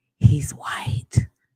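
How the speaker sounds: imitated whisper. Retelling how a gym worker leaned in: imitating someone whispering.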